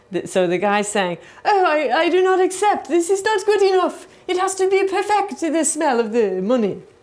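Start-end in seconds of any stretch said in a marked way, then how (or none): 1.4-6.8 very high-pitched put-on French accent. Retelling what a judge said about smelly money: imitating a French accent. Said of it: "that French accent was, uh, par excellence".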